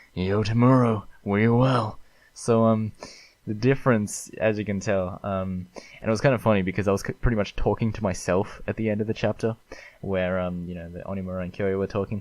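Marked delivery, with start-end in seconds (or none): 0.1-1.9 confrontational, aggressive, in-your-face attitude. Reading a bit of dialogue from the chapter aloud as Onimura, in an aggressive Onimura voice. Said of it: "he's got that very much aggressive attitude".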